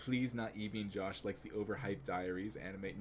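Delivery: normal talking voice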